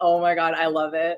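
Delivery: put-on sarcastic delivery. Teasing the other speaker by copying how they say things: imitating someone's sarcastic tone. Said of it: "It's just the way you say things, like".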